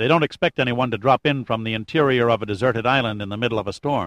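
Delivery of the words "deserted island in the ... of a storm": ordinary delivery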